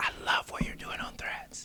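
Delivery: very quiet, breathy whisper right under the breath. Retelling how industry people praise him quietly: imitating someone whispering. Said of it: "Why are you whispering?".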